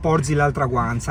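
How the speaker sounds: ordinary delivery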